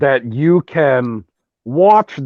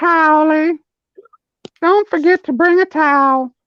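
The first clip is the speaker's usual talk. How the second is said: very high-pitched put-on voice; 14 semitones higher than usual. Saying they can't do Herbert, the speaker does their one voice: Towelie voice. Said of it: "That's my best voice".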